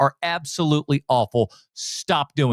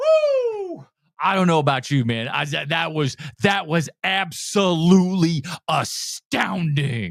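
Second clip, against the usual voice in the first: mock exaggerated fake hype, over-the-top excited delivery; 2 semitones higher than usual. Mocking other YouTubers' trailer reactions: imitating over-the-top trailer reactions. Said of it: "They all follow this arc".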